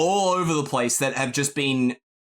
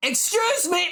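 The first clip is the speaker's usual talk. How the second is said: loud, very high-pitched, insistent shout. Voicing a boy at a counter who calls out again: calling out even louder. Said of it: "he calls out even louder".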